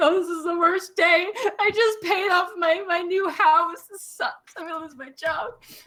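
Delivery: very high, sobbing, weeping despair. A halfling lying on the ground laments as guards arrive, crying, despairing. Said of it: "He's like crying and whatever".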